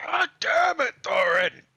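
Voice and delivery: shrill, high, full-volume scream. A game master voices Orden yelling at Thorin, Orden screaming out. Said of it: "Orden screams out".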